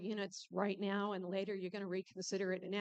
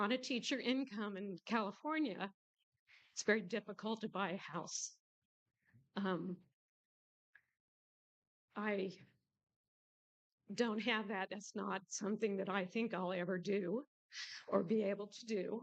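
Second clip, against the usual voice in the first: emotional, close to tears. Speaker addressing Mister Herring: emotional, close to tears. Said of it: "I'm going to cry. I didn't want to be emotional".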